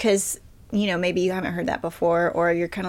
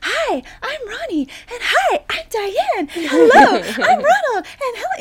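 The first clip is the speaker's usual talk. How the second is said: mock cheery children's presenter voice, higher and louder; 6 dB louder than usual. Retelling a children's show clip friends send: imitating cheery children's show hosts. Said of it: "from some children's show in Australia that's like".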